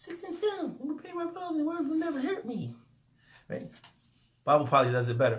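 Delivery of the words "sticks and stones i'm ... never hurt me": very high, very soft, tiny squeak. Talking about not letting others discourage you, in a Mickey Mouse voice. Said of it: "with the Mickey Mouse voice".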